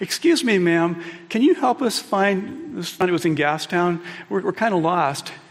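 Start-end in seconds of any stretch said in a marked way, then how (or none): 0.0-2.8 mock nice, smiling, polite, friendly tone. Retelling a friend asking a woman for help while lost, imitating a smiling, nice voice. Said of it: "Smiles when he says everything".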